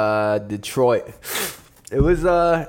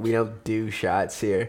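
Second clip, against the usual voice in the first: soft, snooty, dismissive, condescending tone, acted out; 6 dB quieter than usual. Retelling how the lady at the open bar refused a shot, imitating a condescending reply. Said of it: "looks all condescendingly at me like".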